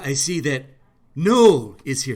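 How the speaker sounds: loud, slow, grand booming announcer delivery. Showing how Trump would read out names, in a Trump impression. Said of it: "this is the way Trump would read names".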